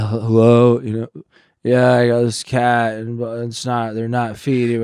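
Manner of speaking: mock stoned, drugged-sounding talking. Retelling calling someone about the kittens: imitating being high on heroin. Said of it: "fucked up out of my mind".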